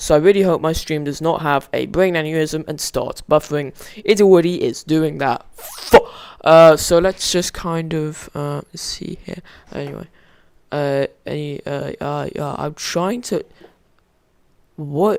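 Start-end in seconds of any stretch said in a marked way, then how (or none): 12.6-15.2 hushed, soft voice breaking mid-phrase. A streamer setting up a stream and talking to viewers, voice cracking. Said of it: "I voice cracked".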